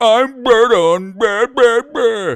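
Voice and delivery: loud, very high, very slow whining. Imitating a viewer named Berto, going for a whiner: imitating Berto as a whiner. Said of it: "like a whiner".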